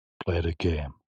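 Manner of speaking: put-on creepy, eerie voice. Telling another player to play the game: put-on scary voice. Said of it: "You sound scary".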